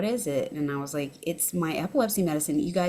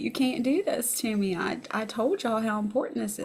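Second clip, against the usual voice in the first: put-on tearful crying voice, higher; 5 semitones higher than usual. Retelling being stopped by police, imitating own crying plea. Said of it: "I just started crying and I was like".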